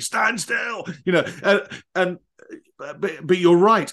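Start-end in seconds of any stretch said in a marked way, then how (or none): 0.0-0.8 mock high-pitched scream. Retelling how a teacher screamed at him on the podium: imitating a scream. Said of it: "just screamed at me".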